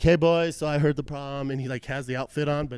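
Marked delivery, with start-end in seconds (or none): 0.0-1.5 campy, overly happy, flamboyant male nurse voice. Retelling how a nurse greeted them in the ER: imitating a flamboyant nurse. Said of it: "this very flamboyant nurse comes in".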